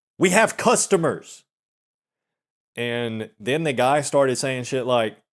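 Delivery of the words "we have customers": high, raised, loud shouting voice. Retelling how the girl at the desk answered a coworker: imitating someone shouting. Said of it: "the girl at the desk just shouted at him".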